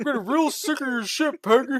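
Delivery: very high, loud cartoon voice. Retelling a line he said, in a Hank Hill voice. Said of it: "I did it in the Hank Hill voice too. I'm like".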